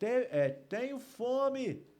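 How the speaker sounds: very high, solemn, biblical-style shout. Retelling how a man on the street cried out: imitating a solemn biblical-style shout. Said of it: "Ele gritou em termos bíblicos".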